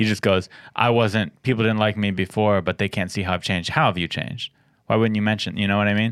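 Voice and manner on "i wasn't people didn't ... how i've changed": ordinary talk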